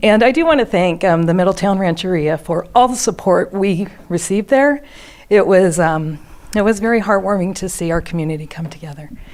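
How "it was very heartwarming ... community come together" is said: fast, choked-up, emotion catching in throat. Giving public thanks for community support: choked up. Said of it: "I'm choked up".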